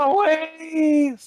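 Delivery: intense, very high, drawn-out loud shout. Starting an attack in the game, copying Aldris: loud imitation of Aldris. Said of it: "Sorry, I had to copy Aldris".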